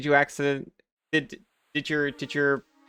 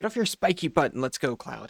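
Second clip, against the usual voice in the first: snarling, angry, growling voice. Voicing a game character's line to Cloud, in an angry growling voice. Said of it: "it's so funny when I do an angry voice".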